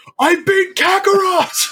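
very high, exclaiming, triumphant cartoon cry, acted out. Retelling a movie's post-credit scene where Vegeta shouts: imitating Vegeta shouting. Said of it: "And Vegeta shouts out".

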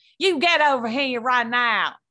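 terrible put-on Southern accent, hollered. Recalling yelling at someone in a bad put-on Southern accent. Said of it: "I yelled in a Southern accent and I was like".

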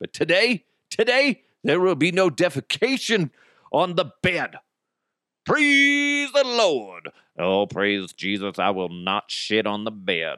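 put-on preacher voice with pulpit-style preaching delivery. Speaker addressing listeners, slipping into a preacher voice. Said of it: "I don't know why I went into the preacher voice".

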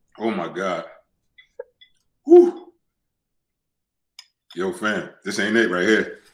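teary voice, near tears. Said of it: "This shit got my eyes watering".

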